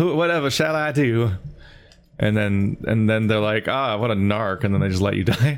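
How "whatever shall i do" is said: mock Southern belle voice, much higher. A speaker mocking characters whose only purpose is calling for help, Southern belle voice. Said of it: "Fair Southern Belle".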